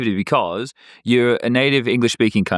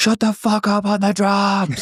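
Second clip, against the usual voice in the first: mock yell, very high and drawn-out; 9 semitones higher than usual. Recounting what one of the fans yelled out: retelling a fan's yell. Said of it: "one of the fans just yelled out".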